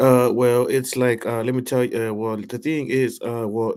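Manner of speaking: mock stuttering, imitated stammering speech. Imitating the man being translated as he hesitates: imitating someone stuttering. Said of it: "he's kinda, like, stuttering".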